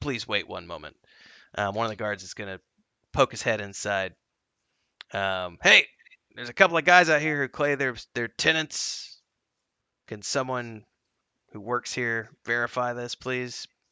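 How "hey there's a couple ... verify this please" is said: polite, raised voice calling out. A guard pokes his head inside to ask staff to verify tenants, guard calling inside. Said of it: "2 guards at the front. It's currently closed, sir, as per orders of the owner".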